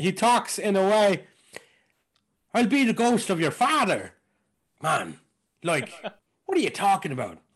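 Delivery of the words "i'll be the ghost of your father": high-pitched put-on Irish accent. Trying out how Christopher Walken talks: Christopher Walken doing Irish accent. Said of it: "let me try it, ... I'm now doing Walken's gestures with an Irish accent".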